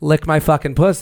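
ordinary talk

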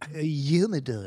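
mocking put-on fancy pronunciation. Mocking another speaker's pronunciation of humidor as if royalty: mocking imitation of a fancy pronunciation. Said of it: "You're the fucking Prince of England?".

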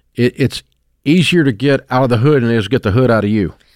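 ordinary delivery

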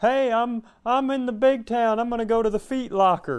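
very high, loud, goofy put-on character voice. Showing the joke he held back from saying, in a put-on voice. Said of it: "It's just me using a voice".

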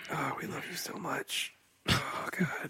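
weird, breathy, sultry whispered sexy voice. Co-host addressing the podcast audience: weird sexy voice. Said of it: "that weird voice you're using".

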